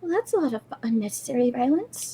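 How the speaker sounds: very soft, mousy little voice. As Gadry hears Althera speak up after a fight, Althera's mousy voice. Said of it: "in a very kind of mousy voice go".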